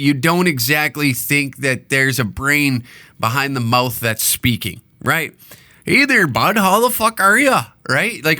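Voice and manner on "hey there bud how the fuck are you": friendly, casual Canadian accent. Showing how the accent sounds in a casual greeting: Canadian accent. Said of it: "when you hear that accent".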